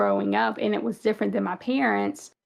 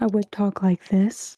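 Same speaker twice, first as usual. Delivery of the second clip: every R sound rounded out. Showing how she talked at work in a hospital: work voice with rounded R's. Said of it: "I would kinda round out my R's, make it more pronounced".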